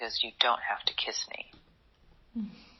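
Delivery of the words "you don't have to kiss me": whispered words. Speaker retells what a man whispered in their ear: retelling a whisper. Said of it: "He whispered in my ear".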